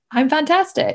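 high, put-on American accent. Recalling how dad went around the house repeating what they learned, imitating his put-on american accent. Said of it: "He always put on this American accent".

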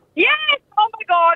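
thrilled and excited, pitched very high. [name] picks up a call from radio hosts Jay and Dave, excited. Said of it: "Why are you getting so excited?".

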